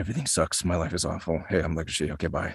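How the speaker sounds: very low, heavy, deep leading-man voice, voice dropped right down. Talking about playing scenes opposite Jonah, the speaker does a Jonah impression as Legoshi. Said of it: "that's a good Jonah impression".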